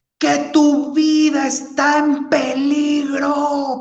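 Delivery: shouting hard, high-pitched and slow.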